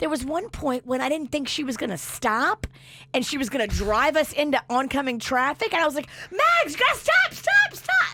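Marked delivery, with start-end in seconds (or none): 6.3-8.1 shrill, very high, panicked yell. A mother retells yelling at her driving daughter to stop: retelling a panicked high yell. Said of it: "it feels like I'm yelling".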